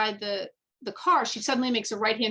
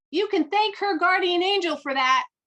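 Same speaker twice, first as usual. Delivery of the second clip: play-acted loud, high yell; 8 semitones higher, 5 dB louder than usual. Retelling a driver calling out of a car window: imitating a driver yelling. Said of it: "rolls the window down and yells out at me".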